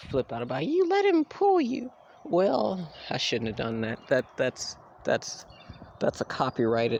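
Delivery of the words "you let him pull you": put-on, very high, squeaky mocking voice. Imitating people who flip out about the dog pulling: high-pitched voice mocking annoying people. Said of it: "that voice I just did".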